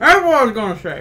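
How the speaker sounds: speaking with food in mouth. Eating mid-conversation, the speaker talks with a mouth full. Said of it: "there's a piece in my mouth".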